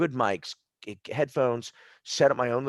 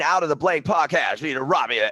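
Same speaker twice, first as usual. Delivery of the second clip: ad announcer voice, higher and louder; 3 semitones higher, 5 dB louder than usual. Showing how a real commercial for the podcast would sound: commercial voiceover voice. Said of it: "I'll do the voiceover for you".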